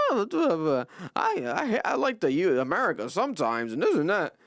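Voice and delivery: play-acted haughty, self-important, swooping sing-song. Imitating a track star's remarks: imitating an arrogant tone. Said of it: "that arrogant tone".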